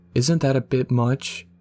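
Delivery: plain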